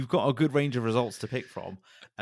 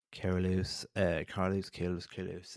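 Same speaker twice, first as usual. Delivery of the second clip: bad put-on team-boss voice, repeated calling out; 5 semitones lower, 6 dB quieter than usual. Calling out a driver's name: terrible Zak Brown impression. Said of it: "my terrible Zach Brown impression".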